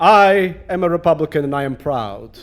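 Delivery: put-on heavy Russian accent, laid on. Retelling what a woman who stood up at Symphony Space said, thick Russian accent. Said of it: "says in a thick Russian accent".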